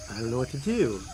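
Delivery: plain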